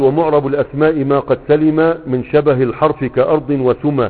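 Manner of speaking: normal talking voice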